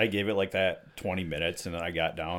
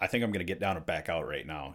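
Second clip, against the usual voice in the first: ordinary talk, nothing marked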